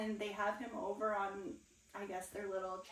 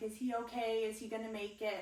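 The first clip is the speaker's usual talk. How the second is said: plain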